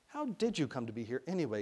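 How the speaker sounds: ordinary delivery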